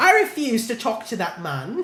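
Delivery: very high, bad, put-on British accent. Getting a Bridgerton vibe while talking, switching into a put-on British accent. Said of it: "I'm popping out the British accent now".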